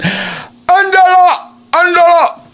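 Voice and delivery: very high calling mom voice, put-on Mexican accent. Imitating how a woman's mother calls her name, mexican tone. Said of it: "her mom would call her in the Mexican tone".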